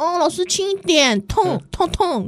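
put-on very high, very slow, drawn-out baby-doll voice. Retelling how a high school student reacted when the teacher hit them, in a mock baby voice. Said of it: "我就走这个路线嘛".

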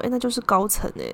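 ordinary delivery

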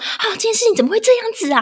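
put-on, fuming, angry, shrill, very high-pitched rant. Retelling how a cousin complained on the phone: imitating an angry rant. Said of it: "她就很气说".

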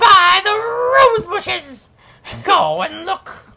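small roar, very high pitch. Reading a story aloud, the speaker voices the dragon: Eggbox Dragon voice. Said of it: "I have to have dragon voice".

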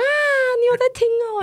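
put-on astonishment, very high and drawn out. Retelling what they said back then, feigned shock. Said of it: "我就故作震惊说啊".

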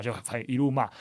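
plain

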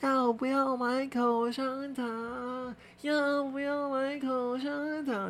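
shrill, high, slow, drawn-out, tearful pleading tone. Speaker imitates an old woman begging at a station exit, imitating a teary old woman's plea. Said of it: "就是有点带哭腔这种，".

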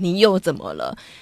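mock impatient, fed-up, put-upon tone. Speaker tells a friend how they imagined the friend's tone, imitating an impatient tone. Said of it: "我想象你的语气就是哦".

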